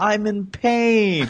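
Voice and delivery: play-acted high scream, pain drawn out long. Retelling a reply to an event helper at the one mile mark: imitating own scream. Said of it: "I just screamed out".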